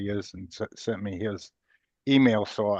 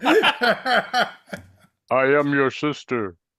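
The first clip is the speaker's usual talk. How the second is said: booming, swooping, big belted-out character voice; 6 semitones higher, 8 dB louder than usual. Answering a request to do a Darth Vader impression: Darth Vader voice. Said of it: "do a Darth Vader impression now".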